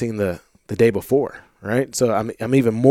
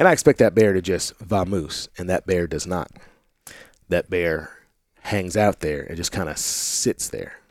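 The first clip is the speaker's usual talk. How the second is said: plain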